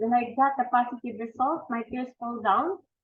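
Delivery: ordinary delivery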